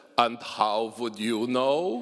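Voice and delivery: put-on thick, heavy German accent. Retelling Morgenthau's reply to someone who called his writing ungrammatical, in Morgenthau's thick German accent. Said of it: "in his thick German accent".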